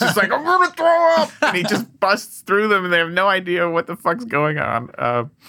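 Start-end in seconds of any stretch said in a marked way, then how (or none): 0.3-1.3 very high, muffled, stifled, smothered blurt. Retelling how a man burst past detectives, mimicking him talking through a hand. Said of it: "He's got his hand over his mouth".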